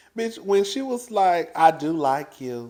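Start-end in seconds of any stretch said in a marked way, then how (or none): 1.5-2.7 slow, taunting, put-on southern drawl. Retelling how someone mocked another person: imitating a mocking southern accent. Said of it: "She was mocking Sutton in her southern accent".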